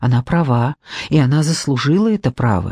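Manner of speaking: ordinary talk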